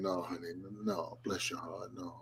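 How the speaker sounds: put-on hushed, very soft, sweet, kindest voice. Imitating another speaker saying no in the kindest way: imitating a kind, sweet no. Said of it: "no in the kindest way".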